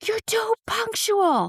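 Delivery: angry scream, pitched very high and shrill. Speaker recounts a man arriving late and yelling at them: imitating him screaming. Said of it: "he starts screaming at me".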